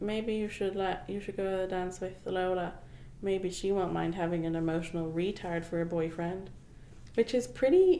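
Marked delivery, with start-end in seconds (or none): none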